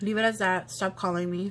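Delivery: ordinary delivery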